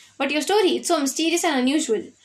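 ordinary delivery, nothing marked

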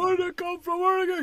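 very high, shrill, loud yelling. Retelling his buddy's dad yelling at the buddy, retelling a yell. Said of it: "He's yelling at my buddy".

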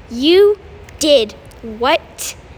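icy, cutting voice. His sister overhears him from behind and demands an answer: icy and sharp. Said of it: "an icy voice asked sharply".

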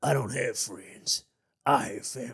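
put-on deep voice, country accent. Retrying a Vin Diesel quote after a failed first attempt: Vin Diesel impression gone country. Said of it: "Why is he country?".

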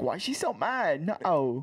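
put-on Australian accent. Imitating Indiana talking to Jane: Indiana's Australian accent. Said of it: "in the Australian accent".

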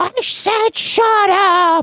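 very high, very slow, drawn-out cartoon shout. Retelling a cartoon shouting clip heard in the shower: imitating Mel Blanc shouting. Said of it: "his shouting segments".

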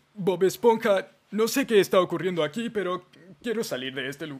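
goofy, high-pitched cartoon character voice. Asked to try it, the speaker performs the voice: Patricio Estrella voice. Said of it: "la voz de Patricio Estrella".

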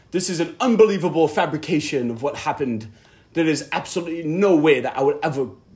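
poorly attempted British accent. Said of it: "I wish I could do a British accent".

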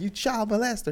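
very high, acted-out shout. Telling a story, the speaker repeats what a friend shouted at people in the street, retelling a shout. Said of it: "and I yelled".

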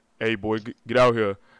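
loud, deepened, creepy voice-changer bass. Retelling a guy using a voice changer in a game, imitating his deepened voice. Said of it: "deepen his voice".

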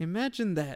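syrupy-sweet, sugary voice. Retelling what the champion said after the fight: imitating a sweet voice. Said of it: "she says it in the sweet voice".

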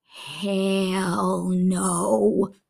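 put-on mutter under breath. Retelling a little guy's answer during a children's talk: imitating a mutter under breath. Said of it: "under his breath, but loud enough for the congregation to hear".

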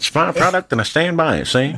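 put-on Chicago mobster accent. Laughing with others over a quoted line; Chicago mobster accent. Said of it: "What accent is that".

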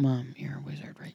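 whispering. Speaker asks their mom a question so someone nearby won't hear, whispering. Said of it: "I'm whispering because I don't want him".

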